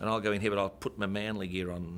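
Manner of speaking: usual speaking voice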